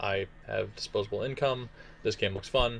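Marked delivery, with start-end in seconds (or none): none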